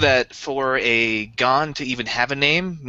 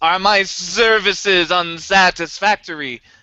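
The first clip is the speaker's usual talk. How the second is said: very slow, very loud robot voice; 5 semitones higher, 4 dB louder than usual. Voicing a protocol droid who answers super loudly: very loud droid voice. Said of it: "Super loudly".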